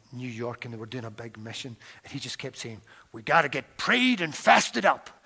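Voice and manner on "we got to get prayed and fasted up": very loud, clumsy, bad American accent. Quote a church leader from a New York church on a big mission, in a bad American accent. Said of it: "It wasn't the best American accent".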